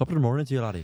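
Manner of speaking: put-on Irish accent. Showing another person how the phrase should be said, put-on Irish accent. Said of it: "you can't do it in an Irish accent".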